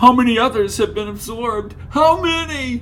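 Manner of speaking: loud, high-pitched whiny voice that carries. Narrator reading a character's line in a novel, loud whiny voice. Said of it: "His whiny voice was so loud".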